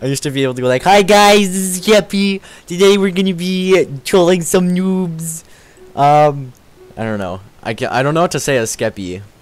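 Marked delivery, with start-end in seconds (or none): 0.8-5.4 put-on baby voice, higher, louder and slower. Showing an impression they used to do: baby Skeppy impression. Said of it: "Like the baby Skeppy impression".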